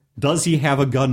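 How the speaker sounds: plain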